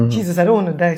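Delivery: put-on frightened voice. Retelling own thoughts while hiding upstairs: imitating own scared voice. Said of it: "I was scared".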